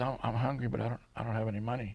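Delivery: timid, small, meek, soft little voice. Retelling what a hungry man answered when asked if he was hungry, imitating a small, meek voice. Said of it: "in a very small, meek voice".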